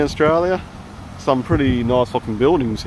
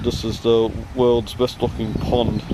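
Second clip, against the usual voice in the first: ordinary talk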